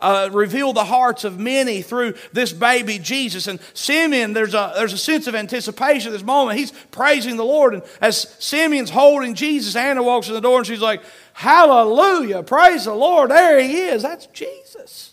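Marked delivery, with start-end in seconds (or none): 11.3-15.1 loud, drawn-out put-on southern accent. Acting out Anna greeting baby Jesus: southern accent. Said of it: "I'm sure she said it with a southern accent".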